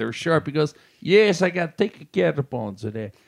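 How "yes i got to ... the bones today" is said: put-on male Italian accent. Retelling a man's reply in a story, do Vito's Italian accent. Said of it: "He had an Italian accent".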